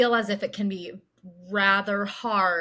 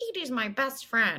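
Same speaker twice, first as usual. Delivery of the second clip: ordinary delivery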